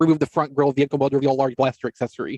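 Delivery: ordinary talk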